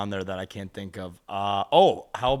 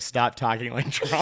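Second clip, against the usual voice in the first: ordinary delivery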